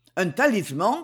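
plain reading voice

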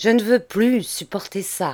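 ordinary delivery, nothing marked

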